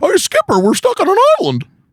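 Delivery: very high character voice, pitch swooping all over. Joking with co-hosts, doing a Don Knotts impression. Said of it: "he's like".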